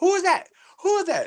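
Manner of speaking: squeaky, very high-pitched voice. Acting out Jamel answering the clowns screaming for him to come out, imitating Jamel's squeaky voice. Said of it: "He had a squeaky voice".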